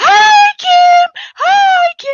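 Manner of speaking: very high, very slow, drawn-out loud hollering shout. Retelling how the other speaker greets Kim loudly: imitating someone shouting loudly. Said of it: "So she shouted really loudly".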